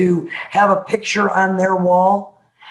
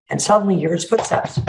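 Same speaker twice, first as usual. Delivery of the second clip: ordinary talk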